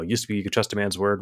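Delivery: ordinary talk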